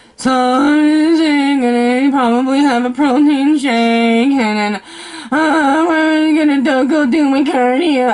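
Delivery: mocking depressed tone. Imitating how someone sounds when they talk to you: imitating a depressed, sad voice. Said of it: "the depression and sadness in your voice".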